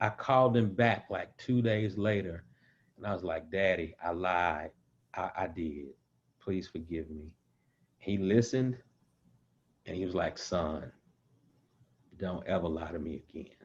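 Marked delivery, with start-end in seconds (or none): 10.4-13.5 calm, low, quiet fatherly voice. Recalling his father's reply after he confessed a lie, imitating father's calm voice. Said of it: "it was always this calm voice".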